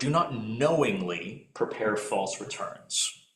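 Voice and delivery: knowingly stressed and said slowly.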